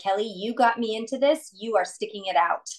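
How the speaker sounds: plain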